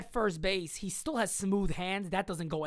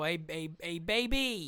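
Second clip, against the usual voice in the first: put-on lazy drawl, baby slow and drawn out; 2 semitones lower than usual. Imitating the team calling the Yankees with a deal: imitating how the callers talk. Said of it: "I don't know why they talk like this".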